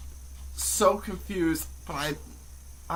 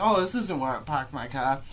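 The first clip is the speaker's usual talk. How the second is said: usual speaking voice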